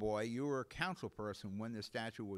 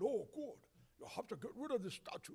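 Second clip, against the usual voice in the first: half-whispered, hushed, breathy put-on Russian accent; 12 semitones higher, 4 dB quieter than usual. A speaker voices imagined Russians pressuring a developer, Russian accent impersonation. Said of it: "That's my best Russian impersonation".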